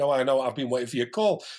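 put-on accent from Dundee. Retelling what a woman said when the speaker phoned her; Dundee accent. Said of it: "In this gorgeous little Dundee accent".

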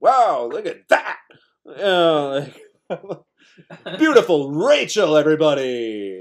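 swooping carnival barker patter, showman style. Showing the voice they put on every day at work: carnival barker voice. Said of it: "Carnival barking time".

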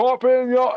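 loud, very high, California-style declaiming voice. Imitating a TV character's loud proclamations: Jason voice, loud California accent. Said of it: "he just does really loud proclamations in a California accent".

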